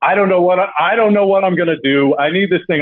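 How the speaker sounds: desperate, pleading voice. Retelling how another speaker sounded on the phone: imitating a desperate voice.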